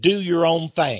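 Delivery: slight put-on Texas accent. Speaker quotes a slogan from the 60s and 70s with a little Texas twang. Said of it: "A little Texas twang there".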